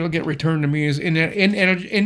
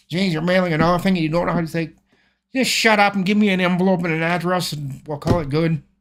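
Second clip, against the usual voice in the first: ordinary delivery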